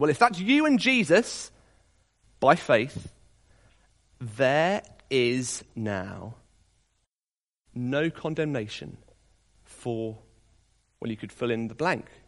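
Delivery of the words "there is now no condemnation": slow, quiet, deliberate reading. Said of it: "read it again slowly to yourself".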